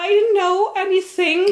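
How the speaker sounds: trembling, wavering, frightened voice, pitched way up. Voicing a cornered man pushed against a wall: wavering frightened voice. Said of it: "but his wo-, voice is wavering".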